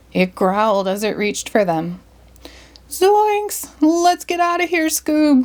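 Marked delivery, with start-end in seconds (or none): 2.9-5.5 frantic, alarmed, panicked, very high shout. Reading the story as a creature jumps out at them, Shaggy shouting. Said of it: "Shaggy shouted".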